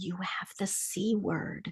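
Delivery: very quiet, slow, unhurried whisper. Retelling what a doctor told a patient, retelling a doctor's whisper. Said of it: "the doctor literally in a whisper said".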